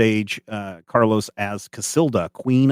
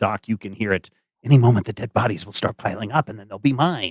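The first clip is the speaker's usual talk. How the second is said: quiet muttering under the breath, character voice. Voicing a character watching a play, muttering under his breath. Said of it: "he keeps muttering under his breath".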